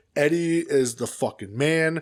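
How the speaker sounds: plain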